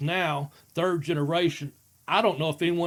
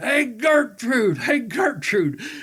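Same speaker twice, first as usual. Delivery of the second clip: put-on high-pitched, loud, bawling drunken yell; 7 semitones higher, 5 dB louder than usual. Telling a family story, acting out a man calling from bed: imitating a man yelling out. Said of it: "laying in that bed and yelling out".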